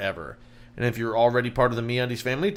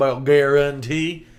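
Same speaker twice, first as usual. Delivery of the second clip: put-on rural American accent; 2 semitones higher, 4 dB louder than usual. Explaining how a word in an ad was spelled: redneck accent. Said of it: "if you put it in a redneck voice".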